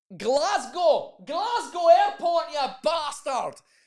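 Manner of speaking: put-on Scottish accent. Recalling a photo taken at Glasgow Airport, say it in a Scottish accent. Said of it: "Doesn't that sound better in Scottish?".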